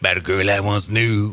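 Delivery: put-on bluesy voice. Speaker greeting listeners and opening a story in a blues voice. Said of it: "so that's my blues voice".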